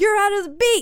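yelling, loud and high-pitched. Recounting someone yelling at a drummer who lost the beat, retelling a yell. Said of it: "ari's yelling at her like".

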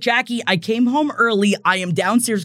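ordinary talk

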